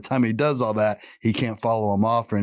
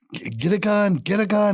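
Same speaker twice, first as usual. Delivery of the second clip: imitated screaming, much higher pitch; 11 semitones higher, 3 dB louder than usual. Retelling a story about a friend who ran toward a neighbor's house shouting for help. imitating someone screaming. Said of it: "He's screaming his name like".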